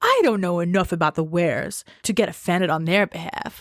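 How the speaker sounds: mock, way too much pizzazz, over-the-top showy narration. Imitating how the audiobook narrator read the line: imitating an over-the-top pizzazz reading. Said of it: "Calm down with the pizzazz".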